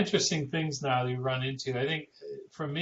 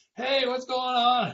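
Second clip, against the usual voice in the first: mock shrill, pitched-up, loud holler; 11 semitones higher, 5 dB louder than usual. Retelling how a visitor comes through the door: imitating someone yelling. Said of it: "somebody starts yelling".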